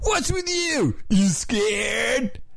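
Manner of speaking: high-pitched, shouted surfer dude voice. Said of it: "I do one of them with my surfer dude".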